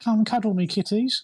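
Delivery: put-on very high, witchy old crone voice. In the game, a character throws his voice from a corpse, in an old hag's voice. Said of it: "in the old hag's voice".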